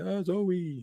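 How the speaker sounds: put-on, very high-pitched, tearful sobbing cry. Retelling a show scene where a character mourns a death: imitating Evan Peters' character crying.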